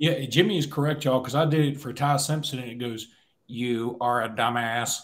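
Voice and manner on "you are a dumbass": put-on flat, slow voice like old home-computer speech. Recalling a bit done for Ty Simpson, Tandy 2000 robot voice. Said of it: "In a robot voice".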